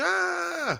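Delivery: very high mock scream. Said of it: "the one they scream at".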